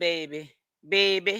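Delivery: put-on Louisiana accent on the word baby. Talking about someone blocking his blessings, in a Louisiana accent. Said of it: "In my Louisiana voice".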